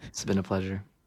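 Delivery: put-on, fake relaxed and calm voice. Thanking the host at the end of an interview, put-on calm post-orgasm voice. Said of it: "See how my voice changed?".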